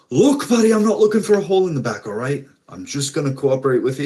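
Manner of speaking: fast, high, rattled-off chattering ramble. Voicing a red-haired guy held at gunpoint: rattling off. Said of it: "He's just kinda rattling off".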